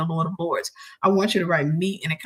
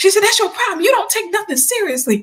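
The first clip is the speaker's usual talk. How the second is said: very high, loud, furious scolding voice; 14 semitones higher, 6 dB louder than usual. Retelling how mom came into the room and went off on the speaker, imitating mom scolding. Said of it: "My mom came in that room and went off on me".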